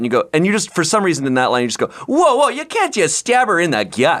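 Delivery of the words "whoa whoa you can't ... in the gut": put-on very high, sing-song, drawn-out Minnesota accent. Quoting another speaker's line from a video back to them: Minnesota accent. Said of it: "You don't have a Minnesota accent for the entirety of the video, except that line".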